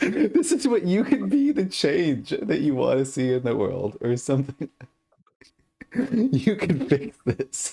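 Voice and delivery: crying with laughter through words, swooping high. Teasing another player about slightly crooked cards, laughing while talking. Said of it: "I am crying laughing right now".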